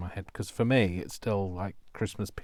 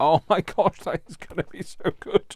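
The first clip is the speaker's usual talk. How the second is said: very high, loud, laughing through the words; 9 semitones higher, 8 dB louder than usual. Reacting to what was just said, the speaker talks while laughing. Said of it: "I'm not sorry for laughing".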